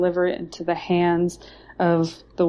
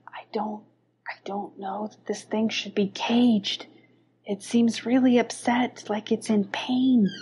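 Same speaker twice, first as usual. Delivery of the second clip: soft whisper, very close to the ear; 3 semitones higher, 4 dB quieter than usual. A game narrator voicing Hachiro, who whispers in a player's ear: Hachiro whispering. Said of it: "whispers in your ear and says".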